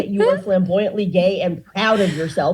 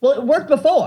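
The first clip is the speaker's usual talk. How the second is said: high-pitched, frantic, out-of-control screaming; 6 semitones higher than usual. Retelling a customer at a pharmacy counter: imitating a customer screaming. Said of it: "screaming at them".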